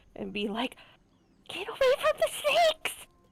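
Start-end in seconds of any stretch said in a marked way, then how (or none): 1.5-3.0 very high-pitched, half-whispered yell. A player's character backs up and whisper-yells at the tiger. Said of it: "kind of whisper, yell at the tiger".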